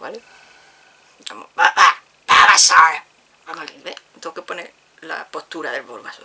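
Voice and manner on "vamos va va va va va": put-on character voice with Andalusian accent, belted out loudly. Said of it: "entrenar la voz para hacerlo".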